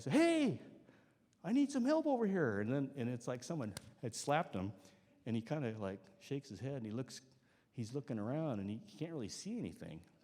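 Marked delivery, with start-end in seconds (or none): 0.1-2.6 mock yell, very high and raised. Retelling calling out to a stranger in ice fog: retelling a yell for help. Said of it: "so I yell again".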